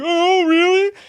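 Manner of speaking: high, loud, mocking taunting tone. Retelling how Stu mocked Gale on the phone: imitating Stu mocking. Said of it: "making fun of them the way he was doing".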